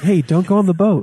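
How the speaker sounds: calm, composed, mild, unbothered voice. Mocking a fighter who quietly tells Sonya not to board: real quiet. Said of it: "real quiet".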